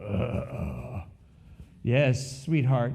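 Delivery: low, sultry baritone voice. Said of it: "very sultry baritone voice".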